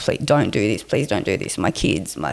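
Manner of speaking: desperate, pleading, begging tone. Retelling being walked to the prison truck, reenacting own begging for life. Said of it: "I was begging for my life".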